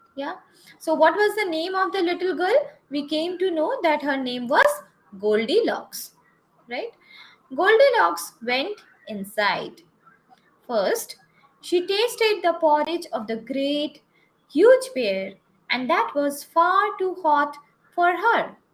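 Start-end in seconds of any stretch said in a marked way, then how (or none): 10.6-13.0 clear pause after the word "first". Reading the Goldilocks story aloud, pause after first. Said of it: "After first, we have a comma here. So, I paused here".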